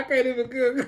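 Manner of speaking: high, breaking-up, helpless laughter. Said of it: "See, I'm already laughing".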